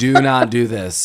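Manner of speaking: put-on very serious voice. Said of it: "this is the only time she is, like, really serious".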